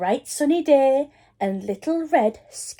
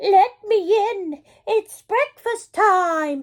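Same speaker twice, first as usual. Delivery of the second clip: high, squeaky, put-on voice; 9 semitones higher than usual. Narrating the story, the wolf answers Granny at her door, squeaky voice. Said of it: "squeaked the wolf".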